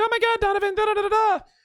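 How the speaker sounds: put-on very high-pitched, airheaded, ditzy girl voice, chattering. Imitating his mom on the phone, in a mocking stupid girl voice. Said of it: "stupid girl voice is better".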